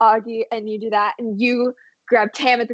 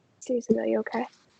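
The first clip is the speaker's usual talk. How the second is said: hushed, very quiet half-whisper, breath only; 10 dB quieter than usual. Retelling how he half-whispered back a question to the speaker, acting out a half-whisper. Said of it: "he kind of whispers back and goes like".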